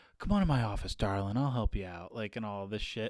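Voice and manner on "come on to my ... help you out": mock charm laid on thick, sweet-talking tone. Retelling how a coworker spoke to an upset old lady: imitating someone turning on the charm. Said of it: "turned on the charm".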